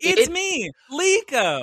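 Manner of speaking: very high sunday school voice. Mocking a character's line delivery: imitating Liko's Sunday school voice. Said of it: "Sunday school voice from Liko".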